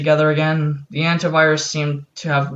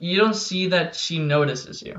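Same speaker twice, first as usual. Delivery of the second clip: normal talking voice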